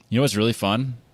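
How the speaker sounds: fake eagerness dripping with sarcasm. Pretending to like racing on street courses, sarcastic. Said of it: "I'm being sarcastic".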